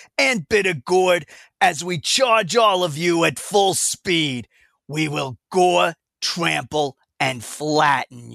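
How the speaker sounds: slow, drawn-out cartoon character voice. Voicing a WrestleQuest character's threat while playing, Bitter Gourd voice. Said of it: "your Bitter Gourd voice sounds exactly like a character from the 1980s Teenage Mutant Ninja Turtles".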